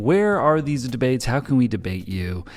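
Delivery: ordinary delivery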